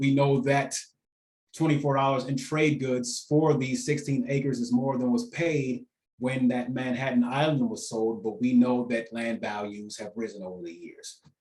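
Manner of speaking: normal talking voice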